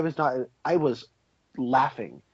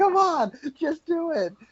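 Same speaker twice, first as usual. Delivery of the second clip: mock freaked-out, frantic tone, pitched very high; 14 semitones higher than usual. Retelling a film scene where Ray freaks out: imitating Ray freaking out. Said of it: "he's freaking out".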